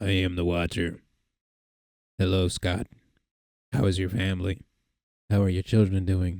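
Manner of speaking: creepy, menacing voice. Describing a family getting letters voiced by the Watcher; creepy Watcher voice. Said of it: "they dub over the letter with this like really fucking creepy voice".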